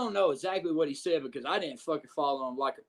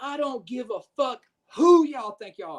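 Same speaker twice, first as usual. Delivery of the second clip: high, loud scream at top of lungs; 8 semitones higher, 7 dB louder than usual. Telling how he came through the curtains with the crowd already there, quote him, imitating a man screaming. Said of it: "screaming at the top of his lungs".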